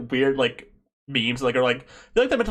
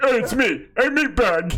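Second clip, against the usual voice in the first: very high, slow, drawn-out put-on cartoon voice; 10 semitones higher, 4 dB louder than usual. Showing the others how they do a Bender voice. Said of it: "I like doing Bender voice".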